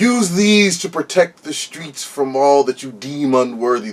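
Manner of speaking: godlike, divine, proclaiming voice. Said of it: "the voice says".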